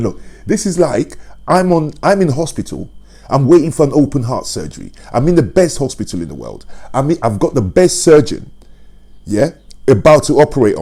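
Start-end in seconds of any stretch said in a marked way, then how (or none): none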